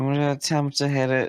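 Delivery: resigned, beaten-down, dejected tone. Announcing an attempt at the next action, sounding defeated. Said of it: "You sound so defeated".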